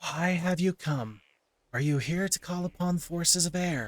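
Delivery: forceful whisper. Narrator voices an air creature questioning the visitors, loud whisper. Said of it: "in what can only be described as a loud whisper".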